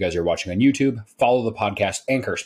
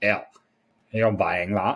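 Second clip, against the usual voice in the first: put-on valley girl way of talking. Speaker imitates what his wife would say if he bought one, valley girl voice. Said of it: "She doesn't sound like a valley girl".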